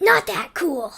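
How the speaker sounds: high, loud voice. Asked what being Zamboni's assistant is like, answer in Sparkles voice. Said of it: "use the voice of Sparkles".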